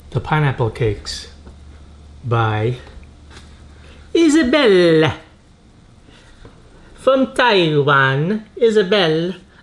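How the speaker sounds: jokey put-on Taiwanese Italian accent, sing-song. Presenting a favorite snack to the audience, in a Taiwanese-Italian accent. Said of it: "what accent I'm doing. Is it kind of like a, a Taiwanese Italian?".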